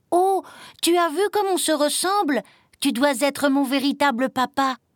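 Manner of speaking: crying out. Narrator reads the little green chick's cry to a lizard, exclaiming. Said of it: "s'écria-t-il".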